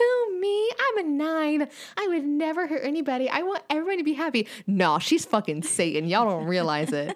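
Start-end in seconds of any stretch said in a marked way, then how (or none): 0.0-4.5 sweet, innocent, cute little voice, pitched high. Speaker says Hannah acts innocent for everyone, imitating Hannah's cute little voice. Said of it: "she got that like cute little voice".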